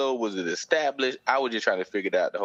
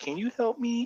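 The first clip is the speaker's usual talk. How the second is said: very high, helpless damsel-in-distress voice. Describing a girl who plays damsel in distress with guys; imitating a high damsel voice. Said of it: "Her voice gets higher".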